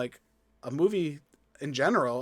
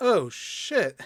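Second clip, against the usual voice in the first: mock unenthusiastic, flat, higher pitch; 5 semitones higher than usual. Describing a movie scene where a man jumps back into a plane, mock-unenthusiastic 'oh shit'. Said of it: "It's so unenthusiastic".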